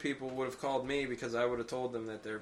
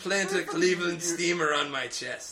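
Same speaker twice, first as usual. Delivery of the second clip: drawn-out, stretched, high and loud delivery; 5 semitones higher, 5 dB louder than usual. Joking with the others, in a voice like the surrogate from Arrested Development. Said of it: "You sounded like the, the surrogate from Arrested Development".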